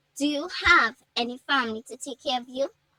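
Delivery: ordinary delivery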